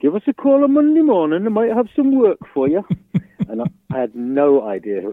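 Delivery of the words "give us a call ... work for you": high, fast, shrill bad Geordie accent. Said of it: "That's my very worst Geordie accent".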